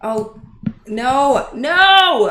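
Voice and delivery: very loud, frustrated outburst with a drawn-out no. A streamer who just lost the chat while working live, mad. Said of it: "I'm so mad".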